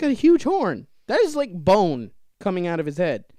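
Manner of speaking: loud, scared, swooping yell. Reacting in a group conversation about a scary bird, yelling. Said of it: "Why are you yelling?".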